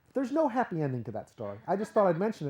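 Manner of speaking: usual speaking voice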